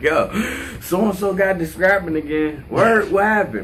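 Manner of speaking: high, eager, curious-sounding voice.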